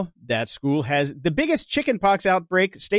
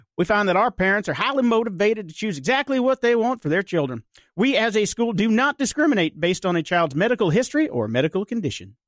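put-on North Carolina accent, pitched up; 5 semitones higher than usual. Reading a school's statement aloud in a north carolina accent. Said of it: "how'd you like my North Carolina accent?".

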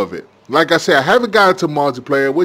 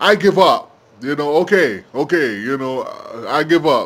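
usual speaking voice

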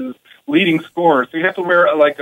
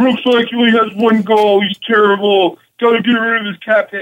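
dismissive, pitched-up, griping, complaining tone; 5 semitones higher than usual. Quoting Facebook commenters complaining about a contract: imitating an internet commenter. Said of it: "You do a very good impression".

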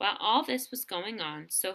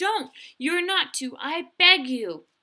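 very loud, high, drawn-out pleading cry; 9 semitones higher, 9 dB louder than usual. Sophie answers the other speaker, crying out. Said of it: "cried Sophie".

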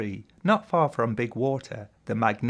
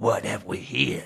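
rough, hissing snake voice with a rasp. Narrator reads the snake Grebby peering down at Terry: hissing as Grebby the snake. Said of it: "hissed the snake".

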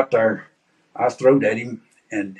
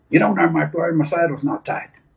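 mock high, rodeo-style holler; 7 semitones higher than usual. Retelling a rodeo wreck, a partner yelling at him: imitating someone hollering. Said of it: "went to hollering at me".

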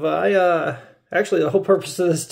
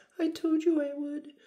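very high, soft, put-on girlish voice; 11 semitones higher, 10 dB quieter than usual. Streamer practicing a voice after making $500, in a put-on girl's voice. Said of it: "still working on my girl's voice".

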